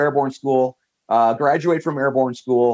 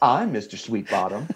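grating, low, soft Southern drawl; 4 semitones lower, 5 dB quieter than usual. Retelling how Mr. Sweetbottom answered him: Mr. Sweetbottom's grating Southern drawl. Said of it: "that Southern drawl accent that is just a little bit too grating".

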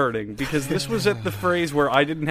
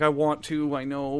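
mock very upset tone, slower. Speaker retells what a woman said, imitating someone super upset. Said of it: "she's like super upset because she's like".

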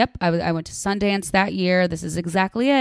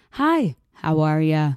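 very slow, drawn-out, stretched words; 2 semitones lower than usual. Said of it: "You sound like [name]".

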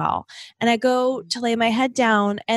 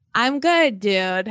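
big heavy sigh before speaking. Asked how she is at the start of the show, answering: with a big sigh. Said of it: "The way you just said that was like big sigh".

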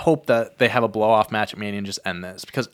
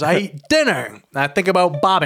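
put-on tough-guy voice, higher pitch; 8 semitones higher than usual. Retelling what Brock Lesnar said on a hot mic: imitating Brock Lesnar. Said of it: "He goes".

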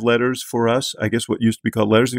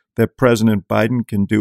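ordinary talk

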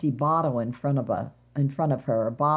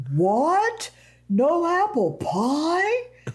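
exaggerated, very high, swooping cry with "pie" stretched out; 14 semitones higher, 3 dB louder than usual. Retelling how Dad jumped up out of his seat and spoke, Big Bad Wolf voice. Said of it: "he sounded like the wolf in The Three Pigs".

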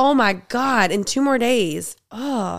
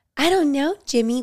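mock baby talk voice, higher; 4 semitones higher than usual. Imitating a woman talking to her husband at a restaurant: imitating baby talk. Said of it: "was she like".

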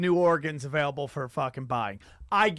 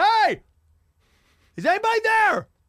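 very high, loud, called-out yell; 6 dB louder than usual. Telling how they called out in a place they thought was haunted, retelling a yell. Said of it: "And I was like yelling out".

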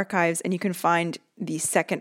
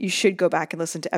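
ordinary talk, nothing marked

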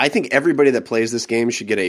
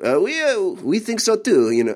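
put-on French accent, much higher, slower; 9 semitones higher than usual. Quoting a french friend's reply about the game, imitating a french accent. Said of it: "that my French friend".

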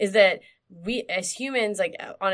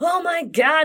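shrieking, high, loud screaming; 9 semitones higher, 6 dB louder than usual. Retelling a car spinning out ahead while driving in the rain: retelling own scream. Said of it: "and starts screaming".

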